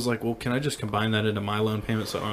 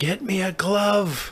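very high, very slow, drawn-out holler; 9 semitones higher, 3 dB louder than usual. Retelling how she yelled at the speaker from the bathroom, retelling a yell. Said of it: "yelling at me".

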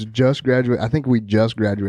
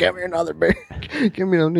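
put-on drunk speech, higher; 8 semitones higher than usual. Retelling a party story, quoting a very drunk guy: imitating a drunk man. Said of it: "some dude was so drunk".

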